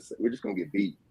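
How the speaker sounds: whispered, hushed sarcastic aside. Imitating Paint being sarcastic: imitating Paint sarcastically. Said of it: "how sarcastic he is a little bit".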